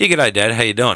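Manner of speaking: plain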